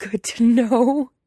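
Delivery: put-on very loud, high, wheezing through laughter. Weiying, trying to smother his laughter, answers Lan Chan, wheezing and smothering laughter. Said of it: "he wheezes".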